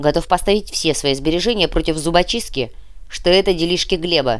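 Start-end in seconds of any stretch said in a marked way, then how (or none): none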